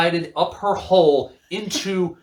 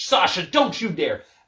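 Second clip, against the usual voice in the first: put-on furious, angry tone. Retelling a story, acting out Nia Jax warning Sasha, mock-furious. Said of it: "Nia gets super pissed off and goes".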